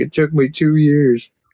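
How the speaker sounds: on the verge of tears. Retelling a streamer whose beard was trimmed off: imitating someone almost crying. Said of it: "he almost started crying".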